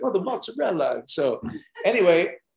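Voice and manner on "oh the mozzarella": put-on Italian accent, much higher. Describing a trip to Italy, imitating how Italians talk. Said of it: "that's how they talk".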